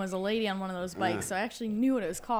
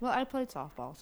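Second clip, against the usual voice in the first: talking through a full mouth, words half-blocked; 3 semitones higher, 4 dB quieter than usual. Answering a question about baseball signs, talking with mouth full of donut. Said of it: "I said that one with my mouth full of donut".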